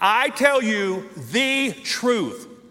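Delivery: word the strongly stressed, leaned on hard. Explaining how to read a quoted saying, stress on the. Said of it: "So emphasize the word the".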